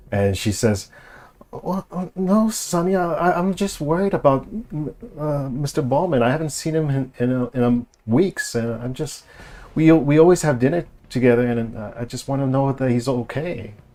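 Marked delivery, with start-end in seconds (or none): 1.5-13.6 meek, timid, faltering voice, pitched up and hesitant. Retelling what a woman says once someone raises their voice at her, imitating her timid voice. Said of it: "she kind of gets a little timid".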